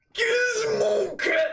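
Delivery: very high, restrained, held-back yell. Calling out a name in excitement: yelling, held back a little. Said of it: "I don't wanna yell too loud".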